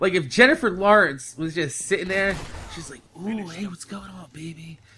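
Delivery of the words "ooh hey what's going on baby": deep voice, very quiet, barely above a murmur. Acting out Jennifer Lawrence flirting in a joke: deep-voiced Jennifer Lawrence impression. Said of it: "your voice got really deep, Jennifer".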